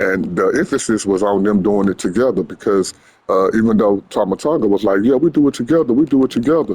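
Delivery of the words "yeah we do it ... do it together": smug, patronising, condescending, pitched-up mocking tone. Retelling what Tama Tonga said: mimicking Tama Tonga's condescension. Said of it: "saying it in a in a in a condescending type of way".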